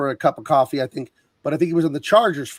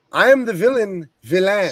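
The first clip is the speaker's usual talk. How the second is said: French villain voice, pitched up; 5 semitones higher than usual. Quoting a French villain from Expendables: Van Damme impression. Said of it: "nailed it".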